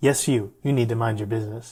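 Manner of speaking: normal talking voice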